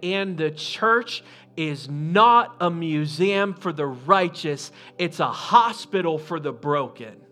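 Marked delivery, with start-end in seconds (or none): none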